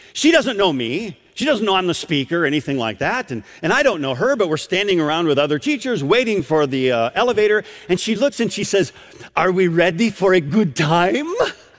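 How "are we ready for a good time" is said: put-on grandmotherly voice with a Romanian accent. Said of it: "she says in this unique accent".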